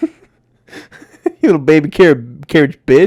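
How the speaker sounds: loud, swooping, brief slip into a Southern accent. Teasing the other speaker with an insult: brief southern accent. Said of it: "like he's Southern".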